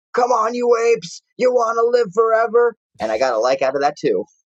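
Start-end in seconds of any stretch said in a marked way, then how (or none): 0.1-2.7 very high-pitched scream at the top of the lungs. Retelling what they yelled at the top of their lungs, retelling a yell. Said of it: "I yell at the top of my lungs".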